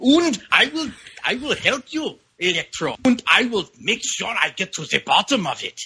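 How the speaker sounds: put-on terrible stock German accent. Discussing a movie scene, the speaker quotes a character in the worst stereotypical german accent. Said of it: "doing the worst stereotypical German accent".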